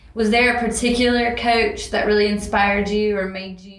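plain

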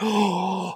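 soft, over the top gasped oh.

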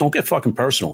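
put-on tough New York tough-guy attitude. Retelling a line said to a comedian at a bar: imitating tough new york attitude. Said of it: "New York attitude".

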